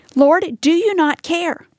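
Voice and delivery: slow, pointed, reproachful, accusatory. Acting out a woman's complaint to the Lord about her sister, in a mock-accusatory tone. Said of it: "I hear in her words an accusatory tone".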